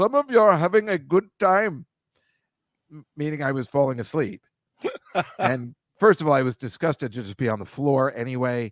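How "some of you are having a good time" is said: put-on Indian English accent, higher pitched. Quoting the breathing class teacher speaking to the class, imitating an Indian accent. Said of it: "imitating this woman who was Indian".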